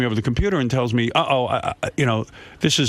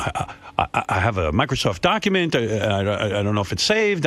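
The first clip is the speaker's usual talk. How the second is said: put-on flustered, nervous stuttering, lower pitch; 4 semitones lower than usual. Retelling the partner's worry about an unsaved document: imitating partner's flustered stammer. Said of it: "and she said".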